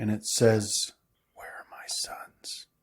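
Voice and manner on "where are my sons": hushed, close whisper. Voicing a figure who speaks to a returning player from behind: whisper in the ear. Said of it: "you hear a whisper directly in your ear".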